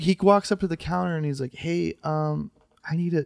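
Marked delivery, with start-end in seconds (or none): 1.5-3.2 very slow, hushed, soft-spoken talk. Retelling a guitarist walking up to the store counter: imitating a soft-spoken guitarist. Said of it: "really soft spoken".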